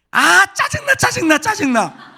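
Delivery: sharp, piercing, very high, shrill, clear snap. Recalling a TV program, the speaker demonstrates its line in a clear, shrill put-on voice. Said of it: "목소리가 좀 맑아야지 좀 이 앙칼지게 이게 대사가 나와야 되는데".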